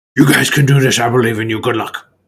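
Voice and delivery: fast, strange put-on dragon creature voice. Voicing what a dragon says, in a weird dragon voice. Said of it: "in a weird dragon mouth".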